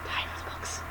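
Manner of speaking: secretive, hushed, breathy whisper.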